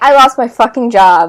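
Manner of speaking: loud exasperated outburst.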